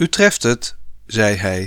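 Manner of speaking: ordinary delivery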